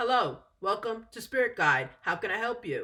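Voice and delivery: stiff, flat, robot-like voice. Caller imitates a business answering the phone, trying to sound like a robot. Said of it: "they kind of try to sound like a robot now".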